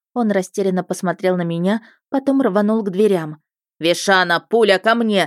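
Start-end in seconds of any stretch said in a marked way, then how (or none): 3.8-5.3 gruff, sharp, barked shouting. A husband, his wife in labor, calls toward the doors, barked order. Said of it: "рявкнул любимый муж".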